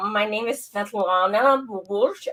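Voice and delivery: put-on Russian accent. Doing a Russian character introducing herself, Svetlana Bubush Russian accent. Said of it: "my Russian".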